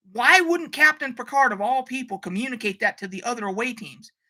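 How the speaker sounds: ordinary talk, nothing marked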